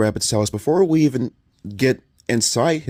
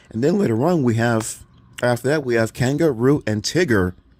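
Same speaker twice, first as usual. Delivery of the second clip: ordinary talk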